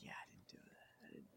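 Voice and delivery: fast, rushed whisper. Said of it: "You're like".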